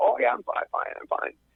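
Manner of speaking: hoarse, creaky, croaking rasp like a frog. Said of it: "like a hoarse frog".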